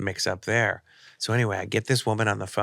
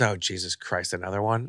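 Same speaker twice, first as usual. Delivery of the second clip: normal talking voice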